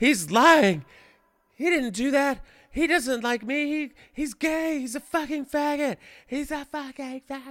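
very high, shrieked screaming rant. Retelling what a woman screamed in the background of a phone call, imitating her screaming. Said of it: "I heard her screaming".

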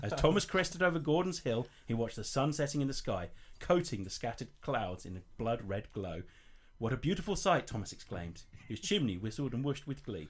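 plain

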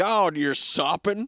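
exaggerated, put-on Texas accent. Imitating Michael Fassbender's line in a film scene: exaggerated southern accent. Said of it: "you are exaggerating the southern part of it".

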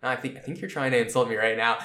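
fake flat delivery, low and quiet. Describing how Gintoki reacts in every episode, doing a Gintoki deadpan impression.

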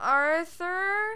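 anxious high call. Alfred calls to Arthur from the next room, nervously. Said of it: "he said nervously".

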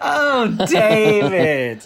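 very high, whiny, swooping wail. Echoing the other speaker's line: Alexis from Schitt's Creek voice. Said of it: "he sounded like Alexis as well from Schitt's Creek".

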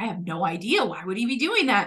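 plain

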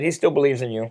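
normal talking voice

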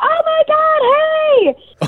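imitated crowd cheering. Retelling how a family party greeted the speaker: imitating people cheering. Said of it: "cheer for me".

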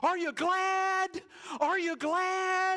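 put-on shrill, very high, very loud little-kid shout. Recalling yelling at funeral guests as a three-year-old, retelling a toddler's yell. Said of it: "I yelled out, 3-year-old me, so imagine a much higher pitch".

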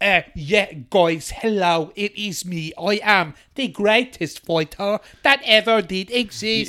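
slow, careful, deliberately laid-on Irish accent. Mocking how an Irish fighter tweaks his accent for America: McGregor impression. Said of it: "that's an impression of McGregor".

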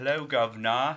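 very loud, high-pitched put-on British accent. Opening an episode intro with her British accent: put-on British accent. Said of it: "I was gonna start with my British accent".

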